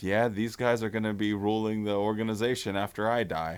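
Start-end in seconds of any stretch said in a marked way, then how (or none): none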